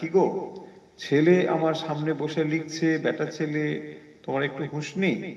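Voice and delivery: normal talking voice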